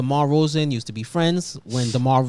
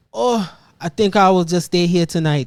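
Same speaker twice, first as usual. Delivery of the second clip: put-on elderly Haitian-accented voice; 4 semitones higher, 5 dB louder than usual. Retell how he said he would stay the night despite Kai's hints, imitating an old Haitian grandfather. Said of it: "a old Haitian grandfather".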